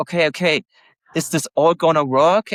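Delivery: ordinary delivery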